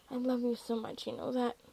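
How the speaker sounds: plain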